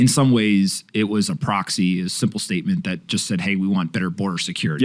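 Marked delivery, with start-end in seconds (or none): none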